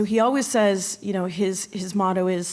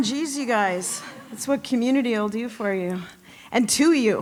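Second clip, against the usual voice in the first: choked up, tearful, weeping and crying through the words; 3 semitones higher than usual. Accepting an award and thanking the gathering, tearful, crying while speaking. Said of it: "just crying on day one".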